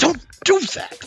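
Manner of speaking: put-on angry shout. Talking about friends sacrificing themselves for everybody, retelling an angry shout. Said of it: "get angry. I'm like".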